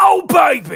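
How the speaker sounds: shrill, very high, very loud yell. Talking through a wrestling card, doing an impression of a wrestling catchphrase. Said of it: "I could do a good impression of that".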